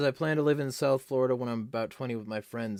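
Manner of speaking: ordinary talk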